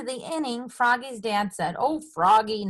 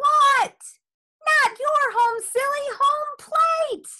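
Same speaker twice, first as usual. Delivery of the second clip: very high, loud calling yell; 4 dB louder than usual. Someone calls after a player running off the field toward home, yelling. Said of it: "yelled Frogolino".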